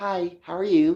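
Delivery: prim, proper, polite, well-mannered tone.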